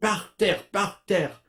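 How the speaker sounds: high-pitched, repeated crowd-style yell. Retelling how students in the audience yelled: imitating students yelling. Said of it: "the students start yelling".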